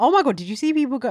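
loud, high-pitched shrieking scream. Reacting to comments on a clothing haul, screaming. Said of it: "Sorry, I don't know why I scream like that".

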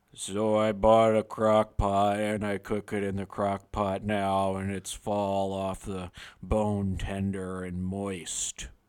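deepest possible voice, very low. Told to speak in their deepest voice, the speaker delivers the bit in their deepest voice. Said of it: "In your deepest voice".

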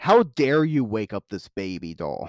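outraged, furious, seething voice. Retelling a scene where the clown points down: imitating furious Art the Clown. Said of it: "pissed the fuck off".

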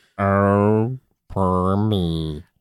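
low, dragging cartoon dog voice, stretched "oh". Joining a co-host's bit, doing a Droopy Dog voice. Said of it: "Is that what he sounds like?".

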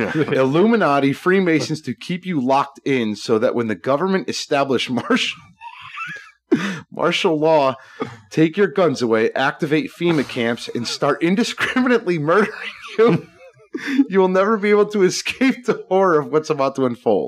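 laughing through words. Reading a quoted meme aloud to the others, laughing while talking. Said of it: "I can't even say this without laughing".

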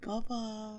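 put-on very soft, breathed-out baby voice. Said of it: "like the Tom Sandoval".

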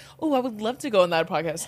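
ordinary talk

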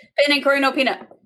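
rapid-fire rattled-off speech. Speaker shows how they say their food order, ordering really fast. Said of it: "I say it really fast".

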